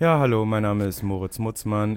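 utterly uninterested, bored, going through the motions. Asked to introduce himself in a totally bored way: totally bored. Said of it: "War das gelangweilt genug?".

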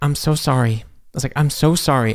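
trembling voice. Retelling apologizing to three women on set, retelling a shaky apology. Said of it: "And my voice was shaking".

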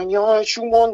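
put-on Saxon dialect accent. Retelling a phone call from an old professor: Saxon accent. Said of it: "so mit so einem sächsischen Ton und sagte".

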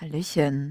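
low, sultry, sexy, suggestive voice. Retelling how she said her greeting, mock-sultry hallöchen. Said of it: "sie hat das schon sehr sexuell gesagt, so".

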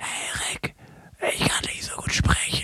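whispered, with barely any voice left. Imitating how someone sounded when they had no voice, almost no voice. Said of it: "du hattest halt wirklich einfach gar keine Stimme. ... ich mach's mal vor, wie es sich für mich angehört hat".

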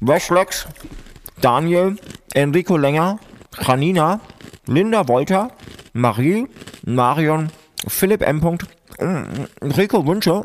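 talking with mouth full. Reading out a list of listener names, talking with mouth full. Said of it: "ich muss noch mal was in den Mund nehmen".

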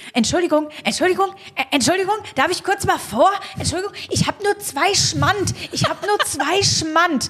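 male voice calling out, high and repeated. Retelling how a man called out from behind in the checkout line: imitating a man calling out. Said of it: "ein Mann kam und rief".

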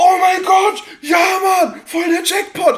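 overjoyed, thrilled, very high-pitched squeal. Retelling how he reacted on receiving the old record, acting out his delight. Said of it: "hat sich tierisch um gefragt".

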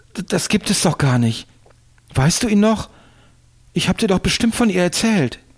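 in a panic. A man who cannot recall a woman's name turns to the narrator, panicked. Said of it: "schaute mich panisch an".

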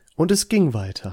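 voice-over narrator, storyteller delivery. Repeating a line of the story, in another narrator voice. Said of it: "Andere Erzählerstimme".

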